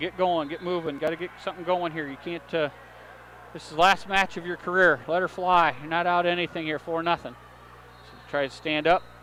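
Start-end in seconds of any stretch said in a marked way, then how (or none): none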